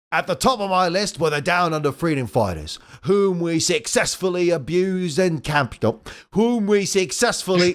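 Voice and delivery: put-on villain character voice with Australian accent. Voicing a tank-bodied robot villain's monologue: Australian Robotnik voice. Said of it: "Australian Robotnik".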